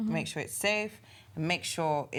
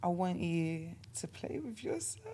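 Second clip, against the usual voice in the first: seductive, sexy voice, quieter; 7 dB quieter than usual. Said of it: "Let's hear your best sexy voice".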